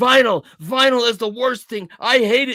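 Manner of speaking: furious, loud, high-pitched screaming rant. Act out how the man you were being introduced to reacted, imitating a man screaming and yelling. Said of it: "He's screaming and yelling at me".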